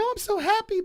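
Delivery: mock tearful sob-talk, very high pitch. Retelling a woman getting engaged on TV: imitating a woman crying. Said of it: "and she's like crying, and she's like".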